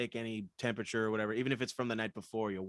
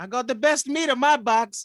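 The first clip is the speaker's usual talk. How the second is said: fake, mock, put-on Italian accent; 14 semitones higher, 12 dB louder than usual. Riffing on a made-up sauce brand name, in a fake italian accent. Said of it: "I love your Italian accent".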